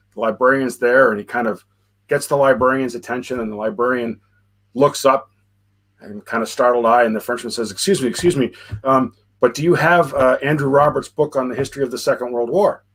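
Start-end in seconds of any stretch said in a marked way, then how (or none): none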